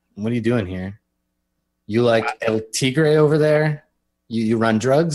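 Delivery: ordinary delivery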